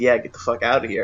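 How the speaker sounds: normal talking voice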